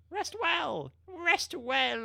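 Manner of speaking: voice cracking. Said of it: "my voice is breaking".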